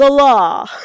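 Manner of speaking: very loud, high-pitched, belted-out delivery. Retelling a TV scene, imitating Cliff saying the law. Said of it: "I love the way he said it".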